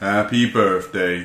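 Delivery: put-on flat, gloomy voice. Retelling a birthday greeting that sounded a bit like Eeyore: Eeyore voice. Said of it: "It sounds like a bit like Eeyore".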